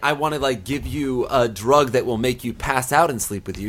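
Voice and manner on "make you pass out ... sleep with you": ordinary talk, nothing marked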